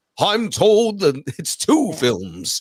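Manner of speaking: very slow, drawn-out British voice with slight tremble. Quoting a news line after describing the tremble: Ian McKellen impression. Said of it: "that slight tremble in, in his voice".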